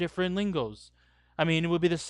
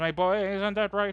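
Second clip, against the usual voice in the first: put-on London Cockney accent; 3 semitones higher than usual. Explaining how these guys really talk, demonstrating a cockney accent. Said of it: "more likely to hear them speak in this kind".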